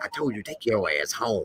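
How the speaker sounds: very quiet, stern, low voice. Retelling how a man told a woman off, imitating a stern, quiet voice. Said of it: "how he be with the little stern, quiet voice".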